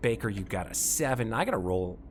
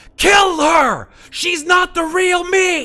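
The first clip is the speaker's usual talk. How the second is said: very high, very loud, drawn-out yelling; 16 dB louder than usual. Game master voicing two identical figures who both yell at the players: yelling. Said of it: "they both yell at you".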